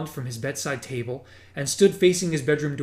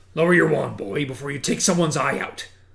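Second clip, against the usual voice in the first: low, growling voice dropped deep; 3 dB louder than usual. A voice from the shadowy hall below warns Harry, in a low growling voice. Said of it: "said a low, growling voice".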